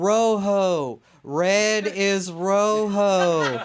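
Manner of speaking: mock loud, very slow yell, rojo stretched out. Retelling a daughter teaching an old lady Spanish: imitating a child yelling. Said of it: "yelling at this old Mexican lady".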